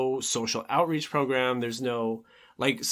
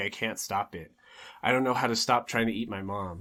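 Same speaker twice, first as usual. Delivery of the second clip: put-on sobbing voice; 3 semitones lower than usual. Retelling a story's plot, the speaker acts out a line, imitating Taro sobbing. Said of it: "He's just like sobbing".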